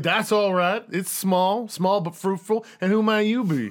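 put-on slow old Southern colonel drawl. Speaker voicing a character's reply after a handshake, old southern colonel voice. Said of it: "Sounds like an old, like, southern colonel".

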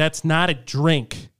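mock irate, very angry, slow, deliberate delivery. Retelling a drive-through order, the worker's reply: imitating an angry worker. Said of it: "very angrily was like".

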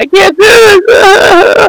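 very high, slow, drawn-out fake crying. Retelling a character who pretends to break down: imitating a fake crying breakdown. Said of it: "a crying, like, breakdown".

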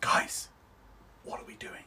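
soft, hushed, unvoiced whisper. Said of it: "Jake goes".

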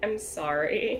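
timid, meek voice. A character in the scene apologizes, really meek apology. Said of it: "You're gonna hear just a really meek".

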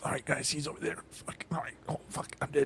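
tense, very hushed whisper under the breath. Retelling playing a video game late at night: retelling a whisper. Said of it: "I'm whispering everything".

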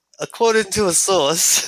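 put-on British accent. After someone asks for voices, he reads out a news report; put-on British accent. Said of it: "that sounds like a British fuck".

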